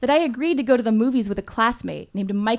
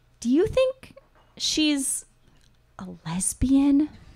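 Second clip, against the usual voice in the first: put-on whisper, higher pitched; 4 semitones higher than usual. Retelling a dad's late-night question to mom: imitating a whisper. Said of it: "would whisper".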